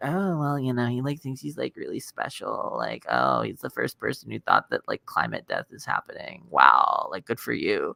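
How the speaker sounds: sarcastic, mocking delivery with heavy vocal fry. Voicing the reaction you imagine from the hosts you hate, in Red Scare girl vocal fry. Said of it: "I hear like the the the Red Scare Girl vocal fry".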